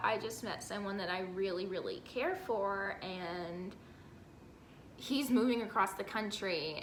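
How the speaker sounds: plain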